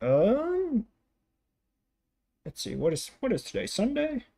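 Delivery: put-on very high, sing-song, swooping old man voice. Narrator voicing a dog walker asked where Susan went, elderly gentleman character voice. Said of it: "this elderly gentleman-looking fella walking his dog".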